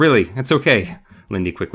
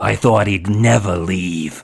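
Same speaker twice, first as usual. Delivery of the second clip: growl from the throat. Reading a book aloud, the dummy speaks: Slappy throaty growl. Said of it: "the dummy asked in a throaty growl".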